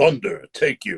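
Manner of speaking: stern, serious, pronouncing tone. Demonstrating how different characters sound to a friend, serious Raiden voice. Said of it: "Raiden is more serious".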